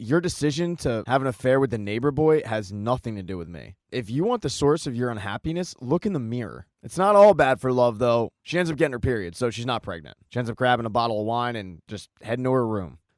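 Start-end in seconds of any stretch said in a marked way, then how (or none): none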